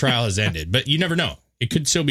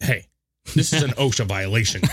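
ordinary talk

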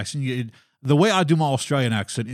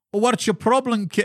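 put-on Scottish accent, very high-pitched; 10 semitones higher than usual. Retelling how Chris answered while both were stuck in the accent: put-on accent. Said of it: "and the accent went".

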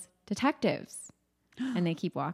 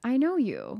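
put-on, insanely calm, eerie killer voice, higher pitch; 4 semitones higher than usual. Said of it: "is insanely calm".

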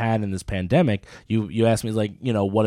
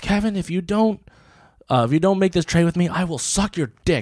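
put-on upset girlish voice, much higher; 8 semitones higher than usual. Retelling what a girl said during a trade: mock-upset threat. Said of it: "she got so upset she forgot how to make a threat".

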